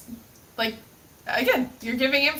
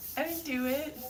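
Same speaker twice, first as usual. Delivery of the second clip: mock-innocent little voice, quieter; 3 semitones higher, 8 dB quieter than usual. Denying banning reason with a joke, putting on an innocent little voice. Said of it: "That innocent little voice".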